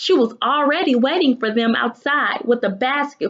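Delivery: ordinary delivery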